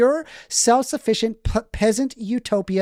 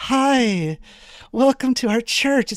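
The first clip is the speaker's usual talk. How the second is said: mocking, fake, overly polite, friendly tone; 3 semitones higher than usual. Mocking how churchgoers greet people during an argument: imitating fake church politeness. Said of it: "It's so fake".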